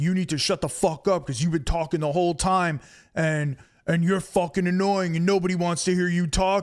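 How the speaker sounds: hard, tough-guy talk, combative and ready to fight. Retelling how a man snapped at another person, retelling tough-guy talk. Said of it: "he got all like fucking tough talking".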